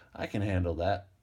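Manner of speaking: ordinary delivery, nothing marked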